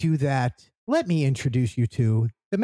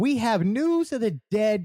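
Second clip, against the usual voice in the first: chipper, bright, high-pitched, happy news-anchor tone; 6 semitones higher than usual. Podcast host announces news of the dead, sounding happy. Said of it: "I don't know why I sound so happy saying that".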